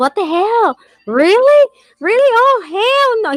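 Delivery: put-on very high, drawn-out, theatrical outburst. Retelling how the son reacts when scared of getting hurt: imitating son's dramatic outburst. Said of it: "He starts going dramatic mode".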